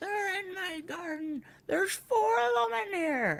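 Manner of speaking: acted, very high, alarmed yell. Retelling what a neighbor yelled from her garden: imitating the neighbor yelling. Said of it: "I heard her yelling".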